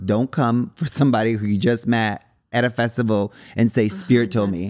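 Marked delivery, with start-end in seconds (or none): none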